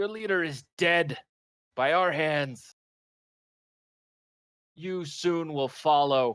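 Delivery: big lungful of a roaring bellow. A player's character stands outside a cave and calls into it, bellowing into a cave. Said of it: "sort of bellow into the cave".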